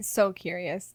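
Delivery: unintentionally sarcastic-sounding tone. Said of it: "It sounded sarcastic".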